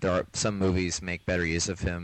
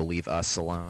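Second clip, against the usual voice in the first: normal talking voice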